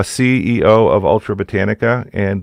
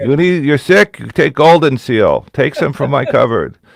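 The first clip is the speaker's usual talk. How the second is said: put-on Boston accent, pitched up higher; 5 semitones higher than usual. Imitating mom again telling her sick son to take Golden Seal: imitating mom, Boston accent. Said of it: "she's from Boston, so it would be more like".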